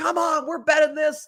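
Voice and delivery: high-pitched, fired-up mock screaming. Describing quarterback leadership, the speaker acts out Tom Brady screaming at his team. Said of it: "he is yelling, he's screaming".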